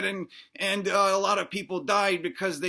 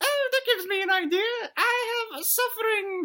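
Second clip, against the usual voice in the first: put-on very high little dinosaur kid voice. Redoing the dinosaur kid's line after correcting himself: dinosaur kid's voice. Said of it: "he sounds like this".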